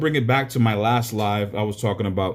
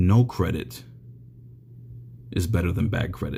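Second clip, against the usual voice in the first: very slow, soft whisper, each word placed carefully; 6 semitones lower, 4 dB quieter than usual. Giving credit advice to listeners, saying it very slowly and softly. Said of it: "I'll say this very slowly and, and softly".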